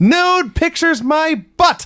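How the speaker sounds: very high, furious, shrill shout at full lung. Retelling a wrestling segment where Eddie shouts: imitating a furious shout. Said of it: "he shouts at the top of his lungs".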